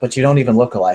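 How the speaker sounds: muttered under breath. Replying in character to a muttered remark: muttered under her breath. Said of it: "she responds to Misha in a similar tone".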